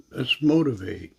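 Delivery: plain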